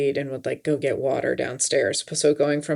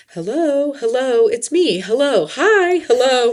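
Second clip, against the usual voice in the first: very high, very slow, sweet, drawn-out, charming voice; 10 semitones higher, 7 dB louder than usual. Retelling walking through the dark house at night greeting ghosts: imitating a charming greeting. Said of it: "charm the ghosts that were trying to scare me".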